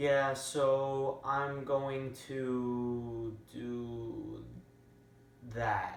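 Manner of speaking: very slow, hesitant, unsure, drawn-out voice. Showing how a voice conveys meaning to listeners: hesitant, unsure voice. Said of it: "the way I said it was unsure".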